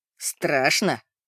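low, caustic, mocking, sarcastic tone. Narrator reads a man asking an old lady, sarcastic question. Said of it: "язвительно спросил он у старушки".

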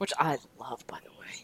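soft, low, whispered aside.

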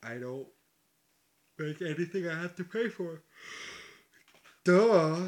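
slow, high talking stretched out through a yawn. Answering another speaker's question, yawning while talking. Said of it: "can you say that without yawning this time?".

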